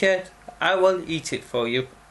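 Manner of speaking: normal talking voice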